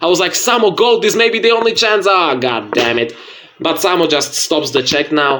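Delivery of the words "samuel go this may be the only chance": screaming, high pitched. Retelling urging a chess player on, retelling a scream. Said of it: "Here I was screaming for the opponent".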